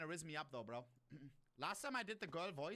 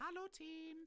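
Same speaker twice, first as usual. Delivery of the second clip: very high-pitched, fake, put-on girly voice; 12 semitones higher than usual. Greeting the team in a game voice chat: put-on girl voice. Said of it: "do I try girl voice?".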